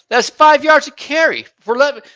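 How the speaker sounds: very high-pitched, loud yelling. Arguing about a player's carries with another speaker, yelling. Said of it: "I'm yelling inside my house".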